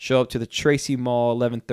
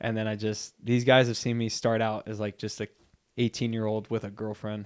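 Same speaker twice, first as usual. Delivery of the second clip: usual speaking voice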